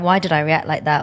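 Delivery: ordinary delivery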